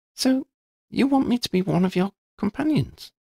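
taken-aback rising voice. [name] responds to Lydia's explanation about the companions, surprised. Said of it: "She sounded surprised".

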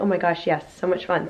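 ordinary delivery

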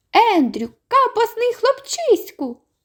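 very high, thin, teasing little squeaky voice. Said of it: "голосок мій жайворон вийшов у неї краще".

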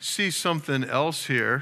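ordinary delivery, nothing marked

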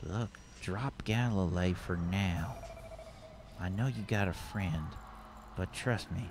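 under the breath mutter. Voicing a woman in a game who leans toward a player, under her breath. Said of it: "just kind of like under her breath".

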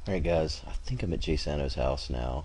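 sneaky, soft, hushed half-whisper. Recording while sneaking up to someone's house, half-whispering. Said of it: "I don't know why I'm whispering like he's gonna hear me".

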